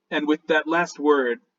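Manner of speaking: ordinary talk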